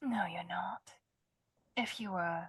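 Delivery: quiet, hushed speaking. In a library, answering someone who says they're here to help, speaking quietly. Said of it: "saying it quietly because it's library".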